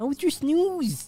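put-on very high baby talk, lisped s in "snooze". Showing how he talks to his pet, in a lisping pet voice. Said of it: "I've developed like a weird lisp. I go".

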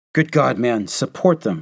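loud, shocked outcry. A captain urges a colonel to act; crying out. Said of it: "Captain Delahanty cried".

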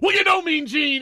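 very high, shrill, acted-out yell. Imagining someone walking up to Mean Gene on the street: imitating a fan yelling. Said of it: "and yells".

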